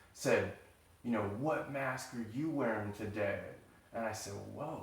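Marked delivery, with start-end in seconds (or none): 1.4-3.4 mock hateful, mean voice, quieter. Retelling what your dad said to you while drinking, imitate his hateful, mean voice. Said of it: "in the most hateful voice and the most mean voice".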